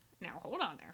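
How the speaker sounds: sort of muffled talking-skull voice. Retelling a fairy tale, voicing the skull that talks: muffled talking skull voice. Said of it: "it says sort of muffled".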